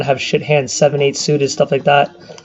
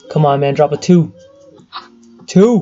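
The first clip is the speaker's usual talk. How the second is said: slow, urging, pleading voice. Watching a poker hand, the speaker yells for a two to drop. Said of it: "the reason why I'm yelling two".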